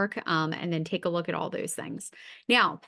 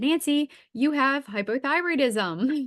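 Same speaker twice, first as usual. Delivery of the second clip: put-on thrilled, excited, drawn-out delivery; 6 semitones higher, 3 dB louder than usual. Retelling a doctor giving a diagnosis, imitating an excited doctor. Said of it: "he was so excited the day".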